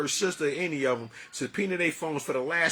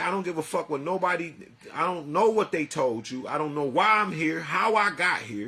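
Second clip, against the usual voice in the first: mock anger kept under control, plainly spoken; 3 dB louder than usual. Retelling what was said to the judge: retelling an angry reply. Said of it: "He can tell I'm angry by the way I'm responding".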